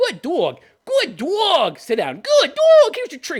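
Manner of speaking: high, sing-song, praising dog-talk voice. Mocking praise by comparing it to dog talk: imitating talking to a dog. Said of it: "the way you would talk to a dog".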